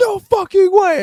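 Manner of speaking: shrill, very loud, terrified-sounding scream. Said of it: "screaming dumb loud like someone's getting murdered".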